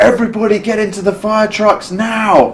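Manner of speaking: urgent, high, loud screaming.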